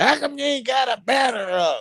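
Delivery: put-on crabby old-lady voice, pitched very high. Recalling an older woman who nagged about a banner, the speaker imitates a crabby old lady. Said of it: "she was like an old crabby lady".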